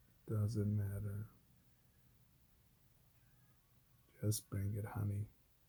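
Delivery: put-on flat, lifeless, clear tone. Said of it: "with a clear tone, but with no life in it".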